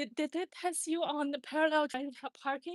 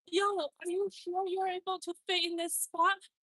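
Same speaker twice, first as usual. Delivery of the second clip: light, mild shout-style call-out; 4 semitones higher than usual. Retelling a man shouting at someone trying to parallel park; imitating someone shouting. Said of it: "and he's shouting".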